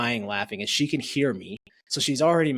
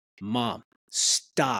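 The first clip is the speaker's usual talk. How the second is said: put-on child voice, very direct and blunt. Retelling how a child told his mom to stop: imitating a very direct child. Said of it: "Very direct".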